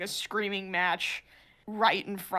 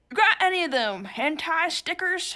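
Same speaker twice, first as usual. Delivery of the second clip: put-on broad, laid-on, raised, pitched-up thick Southern accent; 9 semitones higher, 5 dB louder than usual. Retelling what an older customer asked: imitating a thick Southern accent. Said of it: "he had a thick Southern accent".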